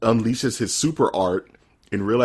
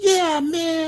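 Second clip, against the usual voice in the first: very high saturday morning cartoon kid voice. Quoting a kid in a show, saturday morning cartoon voice. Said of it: "the kid has this Saturday morning cartoon voice".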